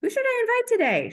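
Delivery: high, indecisive, dithering wondering. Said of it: "scrolling social media being like".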